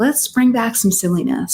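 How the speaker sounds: plain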